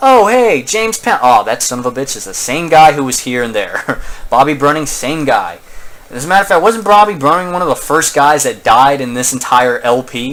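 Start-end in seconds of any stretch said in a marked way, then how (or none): 0.0-1.2 high, loud, sarcastic mock tone. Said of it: "I'm like".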